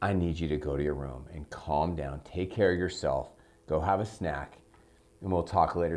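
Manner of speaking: very low, caring and empathetic tone. Demonstrating how a parent tells a teenager to go to their room, empathetic tone. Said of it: "See how there's empathy in my tone".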